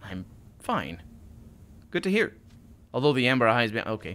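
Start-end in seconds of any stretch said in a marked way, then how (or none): 0.0-1.0 soft, shy, timid otherworldly voice. Narrator reading his reply to a fellow traveller, shy unearthly voice. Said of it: "a note of shyness in his unearthly voice".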